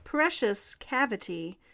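ordinary delivery

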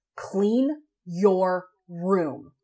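cool, very calm, precise, distinct, acted-out delivery. Speaker retells telling them to clean their room: retelling a very calm, distinct order. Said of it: "very distinctly and very calmly".

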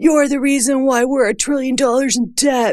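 mocking, high-pitched put-on troll voice. Quoting troll comments about fat people, in a put-on troll voice. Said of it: "I don't know why I do that voice, as if that's the troll voice".

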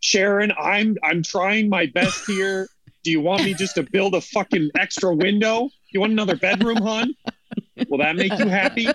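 disgruntled dad rant. Voicing an imagined family dad talking to Sharon: mock disgruntled dad. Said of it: "It's like it's a disgruntled dad".

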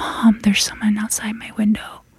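soft, hushed whisper. Retelling waking mom at night about someone outside: retelling a whisper. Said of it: "And I whispered".

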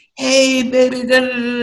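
high, loud catcalling voice.

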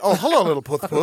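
put-on, lisping nerdy voice. A nerd greeting a kitty, in a nerdy, lisping voice. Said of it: "It sounds like a nerd greeting a kitty".

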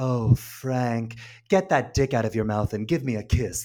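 calm, whispered put-on voice. Speaker gushing about a movie performance, doing a Julianne Moore calm whisper impression. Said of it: "just so calm and everything's in a whisper".

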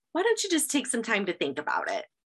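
ordinary talk, nothing marked

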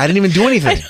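high voice, words bubbling out through laughter. Unable to stop laughing mid-conversation, laughing while talking. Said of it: "I can't stop laughing!".

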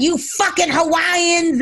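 mock yelling outburst, high-pitched scream. Retelling a woman arguing with the police in Hawaii: imitating someone screaming. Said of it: "she started screaming and all this shit and yelling at".

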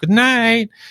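weird, very high-pitched squeak. Saying goodnight to the kids at bedtime, very high-pitched 'goodnight'. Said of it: "in a weird voice, like a very high pitched voice".

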